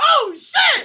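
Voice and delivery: shrill, very high, full-volume, very loud yelp. Retelling how a man jumped back on the couch: imitating someone yelling. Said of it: "He literally yells".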